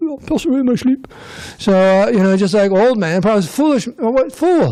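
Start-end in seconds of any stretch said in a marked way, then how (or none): 0.0-1.1 put-on English accent, pitched up. Quoting an old man's words again, in his English accent. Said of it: "He said it with an English accent".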